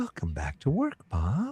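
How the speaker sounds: soft close voice. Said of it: "you hear a voice saying".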